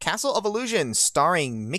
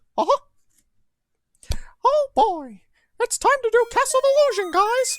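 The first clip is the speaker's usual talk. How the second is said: pitched way up high and loud; 5 dB louder than usual. Speaker introduces Castle of Illusion to his audience, Mickey Mouse voice. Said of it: "Do a Mickey voice".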